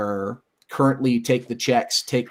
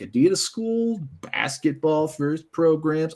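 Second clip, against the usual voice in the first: heavy, dripping sarcasm; 5 semitones higher than usual. Suggesting a fun rivalry between two schools, very sarcastic. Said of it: "I say very sarcastically".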